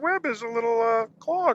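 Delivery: high-pitched cartoon frog puppet voice. Guest tries out a bit of Kermit the Frog doing Spider-Man; Kermit the Frog voice. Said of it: "Kermit the Frog does Spider-Man".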